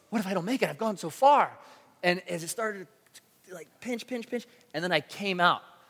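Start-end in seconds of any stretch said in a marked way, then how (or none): 0.1-1.5 frightened, second-guessing, pitched-up fretting. Retelling moving down the line, acting out past fear. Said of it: "I started getting scared".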